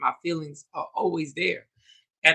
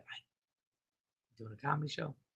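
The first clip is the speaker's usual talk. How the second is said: put-on whisper, quieter; 3 semitones lower, 18 dB quieter than usual. Retelling a text from mom checking in: imitating mom whispering. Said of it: "in a whisper voice".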